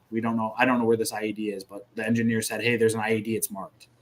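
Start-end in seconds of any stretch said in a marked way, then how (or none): none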